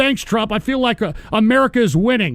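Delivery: ordinary delivery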